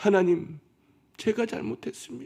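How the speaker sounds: put-on weeping, high-pitched. Retelling what the kneeling surgeon said while crying, acting out a tearful plea. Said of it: "울면서 하는 말이에요".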